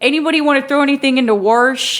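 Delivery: Baltimore accent demo. Asked to keep going, showing the Baltimore accent. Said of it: "Baltimore, I know, now I'm mixing Chicago".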